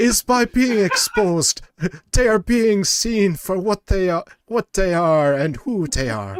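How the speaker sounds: sliding into a Jamaican accent. Mid-speech, sliding from an Irish into a Jamaican accent. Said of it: "Irish to Jamaican accent".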